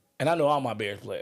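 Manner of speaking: ordinary talk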